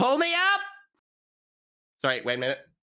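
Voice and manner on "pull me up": booming, high, amplified-sounding shout. Calling up the tunnel to the others to be pulled up: magically amplified shout. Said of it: "use Thaumaturgy to make my voice three times louder".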